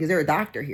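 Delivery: ordinary delivery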